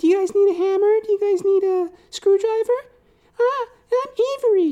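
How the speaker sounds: put-on squeaky, very high, loud little girl voice. Retelling what the mother's little daughter said: imitating a little girl. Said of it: "skipping around the room".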